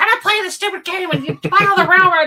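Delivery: put-on mad outburst. Retelling a parent quitting a Monopoly game: imitating an angry outburst. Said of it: "and he got all mad".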